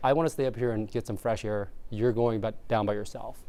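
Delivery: ordinary delivery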